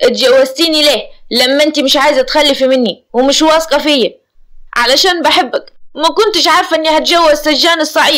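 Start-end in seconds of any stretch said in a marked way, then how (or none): 0.0-4.2 in anger. Amer answers his wife Nourseen's refusal, angry. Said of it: "عامر بغضب".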